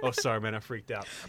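calm, soft, unbothered, easygoing, casual. Retelling a movie scene's apology after a crash: imitating a calm apology. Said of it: "immediately goes back to being calm".

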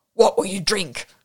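throaty, guttural barking voice. A narrator voices someone pushing their face down to ask Whimsy something, guttural barking voice. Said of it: "a guttural voice barked at him".

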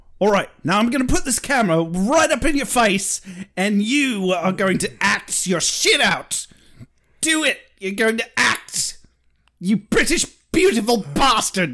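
put-on high-pitched Australian accent. Retelling what the director said on set: Crocodile Hunter impression as a director. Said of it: "my best Crocodile Hunter turned, turned director impression".

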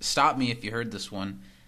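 ordinary delivery

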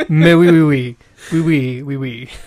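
very loud, terrible, over-the-top French accent. Blaming lemonade and string cheese, then speaking in a terrible French accent. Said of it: "causes me to have a terrible French accent".

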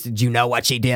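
full demonic possessed horror voice. Quoting a scary movie scene: Exorcist demon voice. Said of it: "That voice".

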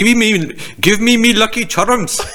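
fake Irish accent. Imitating how another guy talked, in a bad irish accent. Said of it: "this guy's like".

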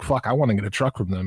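ordinary talk

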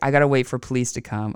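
normal talking voice

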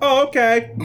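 very high-pitched, loud, suddenly relieved voices.

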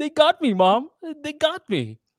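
mock crying, very high, loud, swooping. Retelling finding a guy on the phone with his mom: imitating Gus crying. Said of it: "On the phone with his mom crying".

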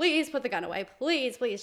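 high, mock pleading, desperate begging tone. Retelling lying on the floor before a man with a gun: imitating her own begging. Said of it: "just begging him".

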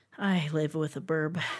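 fond, adoring, loving tone. In a chat about parrot lifespans, mentioning living with a bird, adoring tone. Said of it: "You said that so adoringly".

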